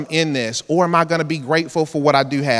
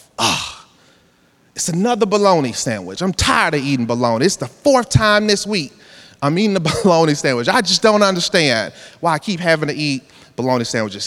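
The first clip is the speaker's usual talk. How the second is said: normal talking voice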